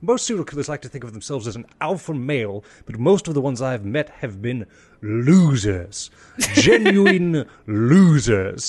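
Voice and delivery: put-on British accent, cutting and scornful. Retelling what a documentary presenter said: imitating a British accent. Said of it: "insane, great British accent".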